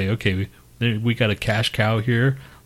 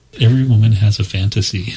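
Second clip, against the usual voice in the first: loud, put-on, deliberately creepy voice; 8 dB louder than usual. Chiming in during joking banter: put-on creepy voice. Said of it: "That sounded creepy".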